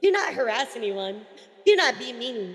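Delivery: measured, emphatic public announcement voice.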